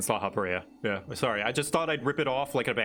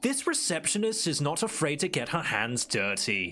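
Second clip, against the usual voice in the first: British TV narrator delivery; 4 semitones higher than usual. Quoting a character's line from Shadowbringers, in a British TV narrator voice. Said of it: "sounds like a British narrator".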